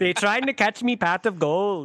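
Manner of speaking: put-on Irish accent, leprechaun-style delivery. Telling a joke about a man at a pub, doing his reply in an Irish accent. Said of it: "a joke in an Irish accent".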